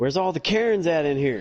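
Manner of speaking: put-on high, sudden little girl outburst. Retelling a friend's kid in a store: imitating a child yelling. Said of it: "she just yells".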